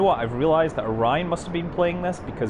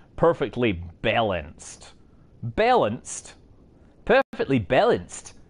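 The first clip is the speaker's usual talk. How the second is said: bad fake Australian accent, slow and drawn out; 2 semitones lower than usual. Mocking another person's way of typing things, in a terrible fake Australian accent. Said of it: "me mocking doing a terrible Australian accent".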